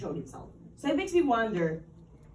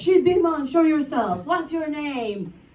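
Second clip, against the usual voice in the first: high, shrieking, screaming, forceful delivery; 5 semitones higher, 8 dB louder than usual. Recounting a priest coming at the speaker with a cross, retelling a priest screaming. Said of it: "just screaming like".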